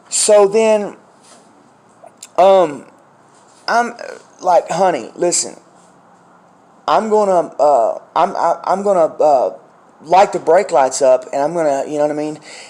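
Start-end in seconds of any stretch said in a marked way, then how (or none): none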